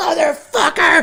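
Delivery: put-on enraged, furious yell, pitched way up. Retelling punching a bag in the garage at night: retelling own angry yell. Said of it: "I was so angry".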